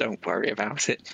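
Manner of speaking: whispered, in character voice. Playing a character who reassures a companion with a hand on the shoulder: whispering in character. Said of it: "and just whispers".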